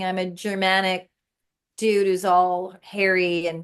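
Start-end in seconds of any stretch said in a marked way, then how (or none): none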